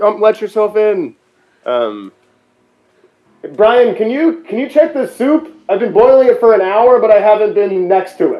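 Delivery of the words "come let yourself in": put-on scream, higher and louder. Retelling what was shouted to a neighbor, imitating a scream. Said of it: "and then I screamed".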